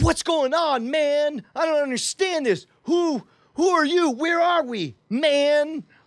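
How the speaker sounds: high, fake, exasperated whine. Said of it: "I feign exasperation and say".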